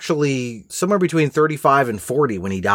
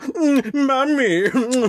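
pitched-up, put-on cartoon prince voice; 10 semitones higher than usual. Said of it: "Peter Ustinov is, you know".

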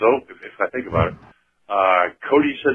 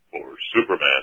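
very deep, lowered superhero voice; 9 semitones lower, 4 dB quieter than usual. Describing the hero's voice after leaving the phone booth: Superman's deep voice. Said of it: "about four octaves lower".

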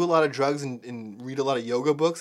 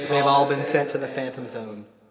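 ordinary talk, nothing marked

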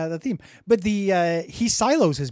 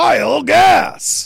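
rough, booming, high-pitched blaring announcer tone; 10 semitones higher, 9 dB louder than usual. Describing a game mod that says a name: Binding of Isaac horse pill version. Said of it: "the Horsepill version going".

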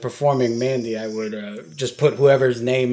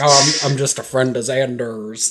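put-on cowboy accent. Retelling a TV scene where Spike answers government agents in a dumb cowboy accent. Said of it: "he tries to do like an American accent and he does it like a dumb cowboy".

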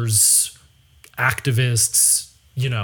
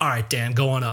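acted dismissive, snubbing brush-off tone. Retelling how a man picking up the phone brushed him off: mock snubbing brush-off. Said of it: "in this snubbing brush off way".

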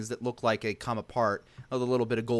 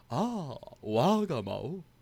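smug, self-pleased delivery; 4 semitones higher than usual. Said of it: "being smug as usual".

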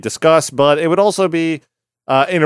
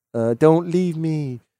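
higher-pitched put-on deaf accent; 2 semitones higher, 5 dB quieter than usual. Speaker retelling Alec's final night, quoting his wife, Mabel's deaf accent. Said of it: "with her deaf accent".

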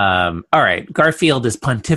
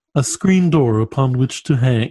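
put-on cartoon cat voice. Reading a comic strip aloud, voicing the cat's thought: Garfield voice. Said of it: "you finally hit on the correct Garfield voice".

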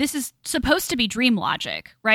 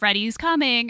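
ordinary talk, nothing marked

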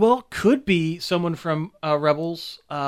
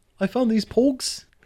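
high voice in a bad New Zealand accent. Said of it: "I can't do a New Zealander accent".

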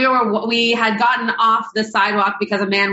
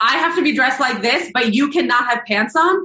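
mock complaining tone, pointed and outspoken; 3 semitones higher than usual. Retelling what a friend said out loud to a passing man: imitating Sarah saying it loudly. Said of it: "very loudly".

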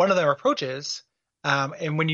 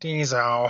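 tizo said with a put-on, sneering, snide tone; 3 semitones lower than usual. Describing how he says the name, the speaker does a mock-snide tizo. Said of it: "he's got this like snide".

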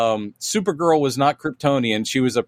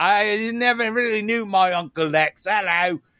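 fake, unconvincing Australian accent with raised pitch; 8 semitones higher than usual. Mimicking a man who does an Australian accent: bad Australian accent. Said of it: "he's doing an Australian accent like".

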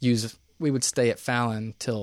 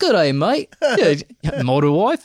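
loud, swooping, drawn-out put-on New Zealand accent; 6 semitones higher, 9 dB louder than usual. Retelling a line from an in-flight video: imitating a mixed New Zealand accent. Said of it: "That was New Zealand mixed with".

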